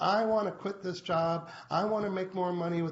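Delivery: small, little, whining voice. Speaker models a goal statement for Lynn in a little whiny voice. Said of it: "that's just my little whiny voice".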